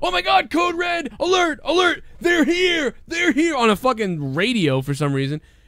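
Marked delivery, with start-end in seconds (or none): 0.0-3.5 mock very high, frantic, panicked cry. Retelling how a wrestler raised the alarm on a radio: imitating Kurt Angle panicking. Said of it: "He said something like this".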